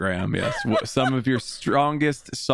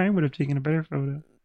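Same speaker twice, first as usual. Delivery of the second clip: frog puppet character voice; 3 semitones higher than usual. Acting out how a negative person complains, in a Kermit the Frog voice. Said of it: "doing really good Kermit the Frog impressions".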